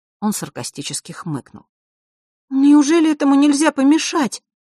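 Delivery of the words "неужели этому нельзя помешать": scared, frightened, very high-pitched outcry. Narrator reads a girl's question after a boy's sarcastic remark, frightened. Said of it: "испугалась Василиса".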